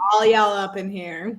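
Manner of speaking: put-on American accent.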